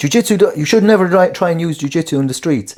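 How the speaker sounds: put-on Nordic accent. Quoting a jiu-jitsu instructor from a reel, in his Nordic accent. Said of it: "Nordic accent".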